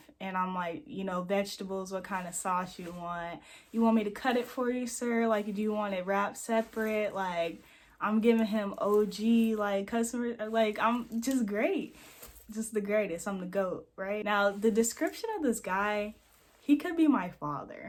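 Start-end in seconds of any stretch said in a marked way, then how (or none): none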